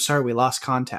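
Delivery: ordinary talk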